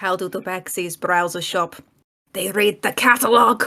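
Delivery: whispering, hushed. Player speaking into a ring during the game, whispering. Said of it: "I'm just going to whisper into the ring".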